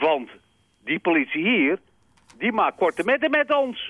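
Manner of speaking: put-on Amsterdam accent. Act out what the boys say about the police, in a broad Amsterdam accent. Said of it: "Gewoon op plat Amsterdams".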